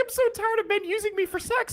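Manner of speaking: mock very high, tearful, sobbing crying voice. Retelling what a crying date said after being taken home: imitating someone crying. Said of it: "crying so bad".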